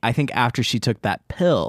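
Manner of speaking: ordinary talk, nothing marked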